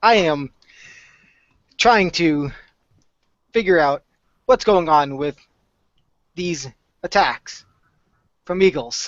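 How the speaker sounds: slow, mechanical, robotic android voice. Voicing a Warforged character during a scene, in a monotone robot voice. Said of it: "in the most monotone voice, acting like a robot".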